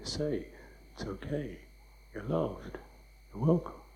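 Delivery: soft, gentle, reassuring tone. Contrasting it with a demanding, self-critical tone, demonstrating a reassuring tone. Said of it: "That's the tone".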